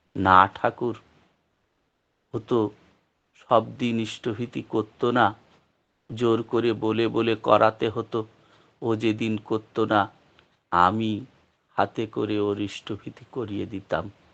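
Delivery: plain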